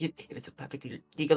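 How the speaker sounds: fearful babbling. Voicing an intimidated character shrinking into his chair: babbling in fear. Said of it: "babbling in fear".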